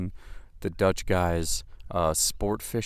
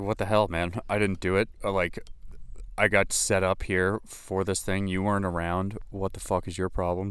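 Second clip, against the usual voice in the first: ordinary talk, nothing marked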